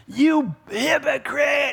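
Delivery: put-on mild preacher holler. Retelling a man with repent signs yelling through the window at him: imitating a man screaming. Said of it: "the guy's screaming at me through the window".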